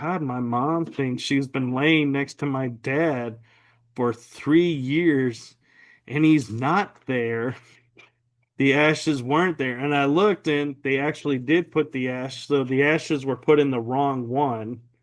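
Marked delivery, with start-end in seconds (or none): none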